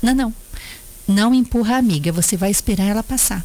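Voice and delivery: normal talking voice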